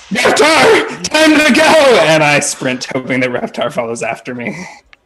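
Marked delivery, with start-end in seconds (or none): 0.1-1.9 very high, loud, drawn-out shout. Playing a character, calling through a door to a companion before sprinting off, shouting.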